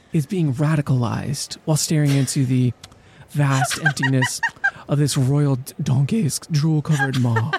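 explainer-style educational narrator voice. Describing a painting of Goya as a monkey: Khan Academy narrator impression. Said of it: "I'm gonna do my best Khan Academy impression here".

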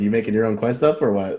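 playful, joking, teasing tone. Speaker teases the other person mid-conversation, teasing. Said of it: "I'm just teasing you".

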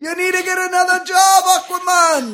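loud, very high put-on Jamaican accent. Riffing on a running aquaman bit, in a jamaican accent. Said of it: "I talk like a Jamaican".

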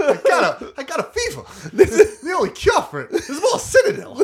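very high, loud delivery with big pitch swoops. Imitating a proposed new voice actor for Shepard: Christopher Walken impression. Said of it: "recast Shepard as, um, uh, Christopher Walken".

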